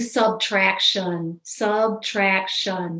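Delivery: slow, drawn-out, deliberate dictating cadence.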